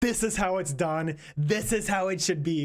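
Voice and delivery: acted lofty, pretentious, lecturing know-it-all tone. Mocking how a commenter will sound: imitating a pretentious attitude. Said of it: "a fucking pretentious".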